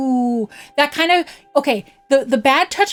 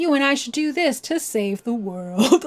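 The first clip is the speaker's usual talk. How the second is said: creepy, suggestive voice, laid on thick; 4 dB quieter than usual. Imitating how Seymour acts toward Yuna, with a creepy Seymour impression. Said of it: "giving her the look, being like".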